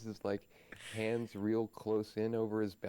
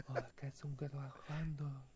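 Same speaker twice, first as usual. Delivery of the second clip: hushed, slow, soft little half-whisper; 4 semitones higher, 7 dB quieter than usual. Game master voicing a healer speaking to Logie, half-whisper. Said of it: "he whispers this little".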